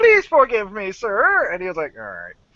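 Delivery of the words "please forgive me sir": play-acted servile begging, high and drawn-out. Retelling groveling on his knees to a Hutt, retelling a groveling plea. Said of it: "I was on my knees".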